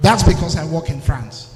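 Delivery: speaking up, projected delivery.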